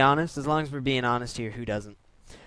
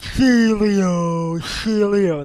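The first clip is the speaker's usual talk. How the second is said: loud, derpy, drawn-out voice; 6 semitones higher, 6 dB louder than usual. Narrating him switching back into his Celio, derpy Celio voice. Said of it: "That's my impression of a Celio. It has a speech impediment and like a derpy voice".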